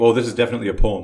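ordinary talk

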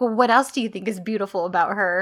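anger mounting with each word, pointed tone. Retelling her line as she gets more and more mad: imitating someone getting angrier. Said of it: "she's just getting more and more mad".

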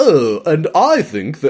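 put-on high, swooping, slow, lilting British accent. Retelling an episode to someone, the speaker voices Edison in a British accent. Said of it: "Why am I doing a British accent?".

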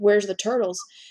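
mock-angry, put-on angry voice. Retelling how Michael reacted to something missing, imitating him being mad. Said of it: "he's so mad".

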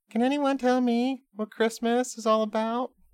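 very high-pitched cartoon voice. During a Christmas bit with a co-host, doing a Charlie Brown impression. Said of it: "That was my Charlie Brown impression".

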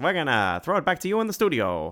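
put-on very silly 1920s old-time radio announcer voice. Describing his comedy skits, doing a 1920s radio announcer voice. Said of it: "doing my radio announcer 1920 voice".

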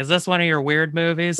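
ordinary talk, nothing marked

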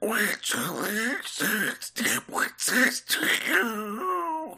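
drawn out, way up high in pitch. Trying out a cartoon character's specific line: Donald Duck voice. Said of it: "I'm gonna try it".

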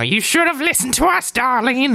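very high, shrill, rising harpy screech. Voicing harpies turning on the two characters: angry shouting harpy. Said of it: "they start shouting things like".

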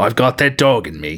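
put-on Australian accent. Joking about Theodore Roosevelt fighting velociraptors: put-on Australian accent. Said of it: "That was a great Australian accent".

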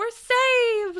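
mock ecstatic, very high, loud excited scream. Retelling a cartoon scene where SpongeBob finds a rock: imitating SpongeBob screaming excitedly. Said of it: "he screams that "We're saved" repeatedly".

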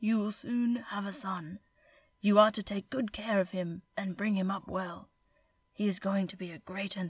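put-on elderly man voice. Telling a story where a bearded old man speaks in a dream, put-on old man voice. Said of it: "I'll do the old man voice".

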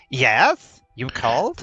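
high, swooping, sing-song little imp voice. Narrator voices the little imp appearing in a flash of light for Jace: Masquin little imp voice. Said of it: "the little imp appears and goes".

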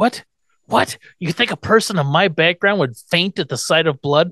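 put-on elderly gentleman character voice. Recapping an episode, acting out Grandpa's outraged reply: Grandpa voice. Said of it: "That's pretty good, actually".

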